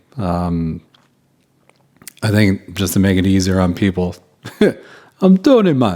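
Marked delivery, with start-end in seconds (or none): 5.2-6.0 bad put-on Jamaican accent, much higher pitch. Recounting how their guide introduced himself: Tony's bad Jamaican accent. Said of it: "Pardon the bad Jamaican accent".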